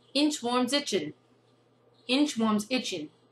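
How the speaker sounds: deliberately assumed New York accent. Trying tongue twisters again in another accent: imitated new york accent. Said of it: "here is my attempt to do the same tongue twisters with this New York accent".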